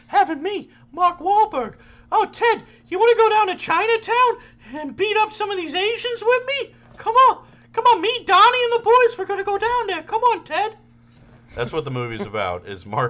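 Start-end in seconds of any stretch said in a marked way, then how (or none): 2.1-10.7 put-on tiny falsetto voice, higher and louder. Acting out a scene from a movie: terrible tiny falsetto Mark Wahlberg impression. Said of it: "I have a terrible Mark Wahlberg".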